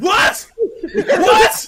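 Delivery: high, loud, shocked yelling.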